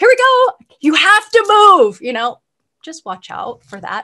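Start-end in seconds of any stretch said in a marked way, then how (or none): 0.0-2.0 anxious, loud, high, swooping call. Describing people sledding down Mount Shasta and telling them to move, getting a little loud. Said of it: "Sorry if I'm getting a little loud".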